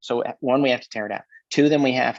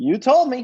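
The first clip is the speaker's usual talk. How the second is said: high, laughing, cheerful chirpy voice. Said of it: "Nobody cheerfully signs it and goes".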